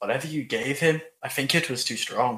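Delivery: hushed, quiet whisper. Player whispering to Mouse about another character; whispering. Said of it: "I'm gonna whisper to Mouse".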